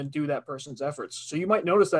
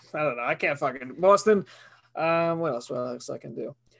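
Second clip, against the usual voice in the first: ordinary talk, nothing marked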